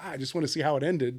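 ordinary delivery

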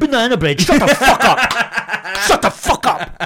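very loud, very high, furious, shrill, drawn-out yell. Retelling shouting at a heckler at a gig: retelling an angry shout. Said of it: "And I lost my cool a bit".

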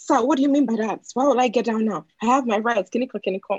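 fake American accent, demanding tone. Retelling talking back to an old man in an Uber, in a put-on American accent. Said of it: "I was putting an American accent".

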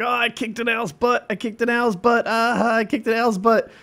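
gushing, very high-pitched, eager, enthusiastic voice. Imitating a man's distinctive speaking pattern: imitating an enthusiastic higher-pitched man. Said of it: "really enthusiastic and slightly more higher pitched than most guys".

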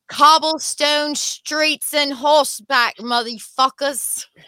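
convincing put-on British accent, slow and high. Joking about going back to horseback days: good british accent. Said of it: "a whole, like, good British accent to, like, almost a really horrible German accent".

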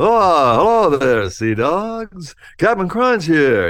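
"oh" drawn out, pitched high and loud. Showing how the voice was exaggerated for the cartoon: exaggerated Captain Crunch voice. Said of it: "exaggerated that voice even broader for the".

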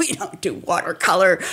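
offhand, knee-jerk dismissive tone. Retelling a reply to a friend's phone invitation: imitating a dismissive reply. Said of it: "really dismissively".

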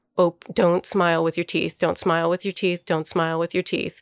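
mock whispering. Retelling what a dancer said to his partner on stage: imitating someone whispering. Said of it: "he whispers to her".

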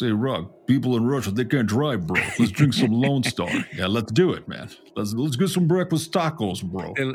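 put-on Russian accent. Showing Max how the speaker's Russian friend talks, in a Russian accent. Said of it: "my Russian friend, he talks like this".

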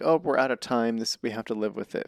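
ordinary talk

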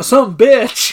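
put-on mocking voice. Retelling a scene where the accountant mocks Frank: imitating a mocking put-on voice. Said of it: "he starts mocking Frank".

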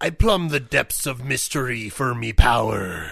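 silly sailor character voice. Improvising a comedy bit as a sailor, in a funny sailor voice. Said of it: "Now we just do funny voices".

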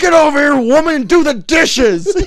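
put-on very loud, high-pitched drunken holler. Retelling a drunk father yelling at the mom: retelling drunken yelling. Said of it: "It's just it's yelling such".

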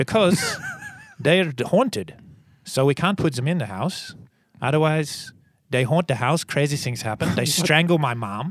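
put-on Dutch accent. Quoting a man's reply to a question, the speaker switches to a Dutch accent. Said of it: "Here's my Dutch accent".

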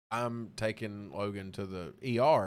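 plain

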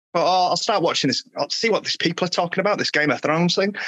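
ordinary delivery

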